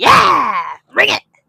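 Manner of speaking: eager, excited rah-rah cheering enthusiasm. Teasing the other speaker by imitating his eagerness: imitating excited cheering. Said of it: "He was all like".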